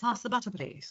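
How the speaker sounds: very hushed, quiet English accent. Two non-English speakers practicing accents, now trying a British accent. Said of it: "now UK".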